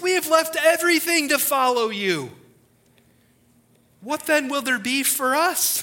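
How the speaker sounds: mock affronted indignation. Preacher retelling a follower's reply to Jesus, acting it out indignantly. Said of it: "I can hear the indignancy in his voice".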